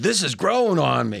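ordinary talk

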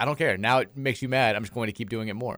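ordinary talk

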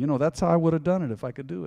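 put-on mumble. Retelling being helped to tie shoelaces as a kid: imitating own past mumbling. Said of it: "And I'd be mumbling".

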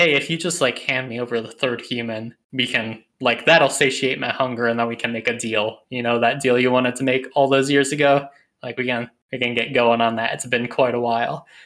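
normal talking voice

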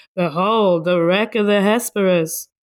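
sarcastic, mocking tone. The only american woman under thirty in the place speaks, sarcastic. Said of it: "She's being sarcastic".

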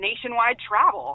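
ironic, tongue-in-cheek, sarcastic throwaway tone. Describing where he went for treatment and the kickbacks: sarcastic. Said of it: "I say that sarcastically".

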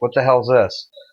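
normal talking voice

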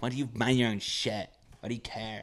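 put-on girly voice. Quoting one of the people, who was a girl, in a put-on girl voice. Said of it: "I'm doing a girl voice because one of the people was a girl".

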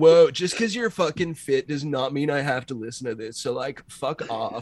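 laid-back surfer dude voice. Acting out a character telling someone off: surfing bro voice. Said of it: "that surfing bro fucking asshole".

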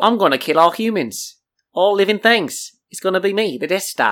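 strong, laid-on New Zealand accent. Imagining the Death Star talking, doing a Taika Waititi voice. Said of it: "talking like Taika Waititi".

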